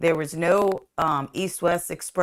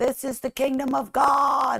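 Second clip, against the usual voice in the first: play-acted very high, shrill screaming; 9 semitones higher than usual. Retelling a dream where creatures were confronted: retelling a scream. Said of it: "And I was screaming it".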